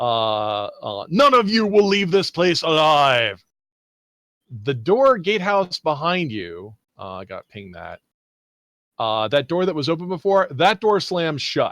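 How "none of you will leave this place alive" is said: high, booming villain voice. Narrating a scene, voicing the booming voice from the tower: booming voice. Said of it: "the booming voice from the tower uh, um, will will will say".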